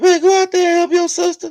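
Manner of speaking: very high, very loud, high-pitched hollering yell. Retelling how a childhood friend's mama called him: imitating a mother yelling. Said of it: "all you hear is his mama yelling".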